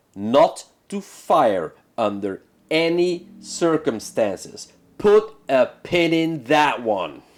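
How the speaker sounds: very slow, deliberate delivery, drawn out word by word. Retelling an order given to them, said very slowly. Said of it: "I'm gonna say this very slowly".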